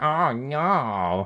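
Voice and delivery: high cry, "no" stretched out. Retelling how Luigi reacts to an enemy attack: imitating Luigi getting hit. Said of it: "and he just goes".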